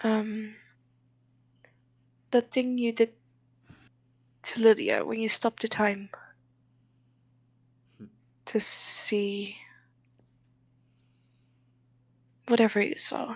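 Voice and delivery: practically whispering, hushed. A character speaking to her, practically whispering. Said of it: "practically whispering this to her".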